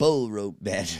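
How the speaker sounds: mock dry, dusty voice. Reading a wrestling match type aloud in a put-on dusty voice. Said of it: "in my dusty voice".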